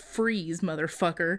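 usual speaking voice

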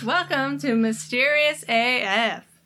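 natural Southern accent coming out, pitched high. Host welcoming listeners at the start of the show, southern accent. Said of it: "The southern accent is coming out".

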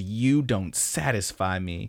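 slow, smug, angry cocky taunting tone. Retelling a character's line meant to anger her: imitating an angry, cocky line. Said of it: "angrily and, like, cockily".

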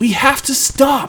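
very high, drawn-out shouting. Finally catching up to his companion on horseback, a rider calls out: shouted. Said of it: "Drew shouted".

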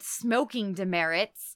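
normal talking voice

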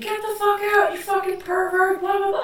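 mock screaming fit, very high and shrill. Retelling a girl at a man who walked into the bathroom, retelling a girl screaming. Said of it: "She starts screaming".

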